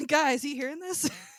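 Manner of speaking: cheeky, sassy princess voice. Describing a princess who talks to animals, imitating a sassy princess. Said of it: "she's definitely got a little little sass".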